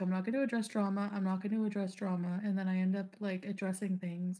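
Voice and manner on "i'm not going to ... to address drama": ordinary talk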